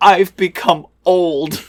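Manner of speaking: put-on self-pitying moan. Retelling how a film character said her line: imitating a woe-is-me lament. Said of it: "woe is me".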